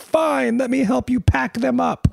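put-on, very high, sobbing through the words. The speaker retells a young girl in trouble losing her toys: imitating a child crying. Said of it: "as she's crying".

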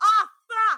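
very high, loud, sudden, startled yell. Retelling how someone came into the room: imitating someone yelling. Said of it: "he comes in yelling".

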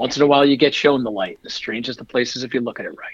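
usual speaking voice

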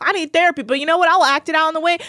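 worked-up, heated outburst. Retelling a drunk person angry that his bottle was taken: imitating Dane getting heated. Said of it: "Dane gets so heated".

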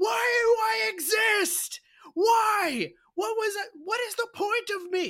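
very high, drawn-out despairing crying wail. Imitating a character who has no chore to do: imitating a despairing scream. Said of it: "she's screaming to the heavens in an, an existential despair".

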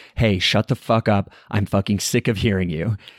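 usual speaking voice

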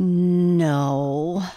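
slow, unhurried. Narrating a listener answering a frog's questions, replying slowly. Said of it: "replied Peter slowly".

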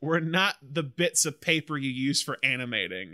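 ordinary talk, nothing marked

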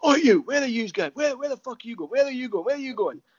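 mock shrill yelling, very high pitch, repeated shouts. Retelling being caught sneaking out after a prank: imitating Fergie shouting. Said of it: "all you hear is Fergie shouting".

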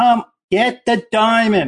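imitated yelling. Retelling own reaction while watching the film: retelling screaming at the TV. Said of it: "I'm screaming at the T V".

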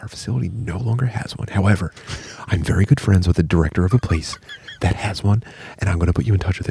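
rattled-off, fast, hushed confidential whisper. Retelling what a woman told them about a laser, imitating her whispering. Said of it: "she's like whispering".

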